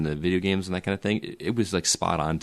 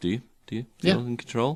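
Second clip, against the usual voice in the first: mock matter-of-fact delivery, much higher pitch; 5 semitones higher than usual. Speaker recreates how he delivered a film line: mock matter-of-fact delivery. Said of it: "It was almost kind of matter of fact".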